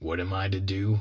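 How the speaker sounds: ordinary delivery, nothing marked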